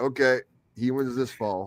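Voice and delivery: ordinary talk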